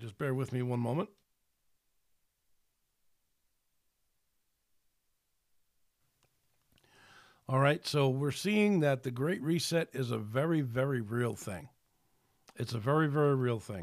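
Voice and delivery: voice giving out, losing voice. Going on with the talk after saying so: losing voice. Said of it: "I'm losing my voice".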